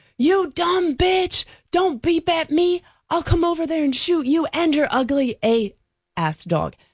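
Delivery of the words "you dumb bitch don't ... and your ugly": very high, ranting hollering. Retelling how a guy started yelling at them and their dog: retelling a man's yell. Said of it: "this guy starts yelling".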